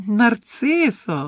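squeaky cry. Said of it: "вигукнув він пискливим голосом".

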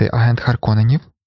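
ordinary delivery, nothing marked

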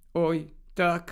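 hollow, muted, dull, muffled voice. A narrator reads a girl's reply as a friend hands back her books, muffled voice. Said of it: "глухим голосом сказала Герміона".

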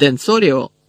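shouted. In a wand duel, a student casts his spell at his rival, yelled. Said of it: "зарепетував Мелфой".

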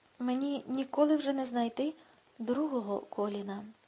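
plain reading voice

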